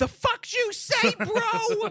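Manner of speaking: shrill, very high, drawn-out, furious screaming. Retelling a movie scene where the father screams at his son: imitating a screaming father. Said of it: "he's screaming at this kid".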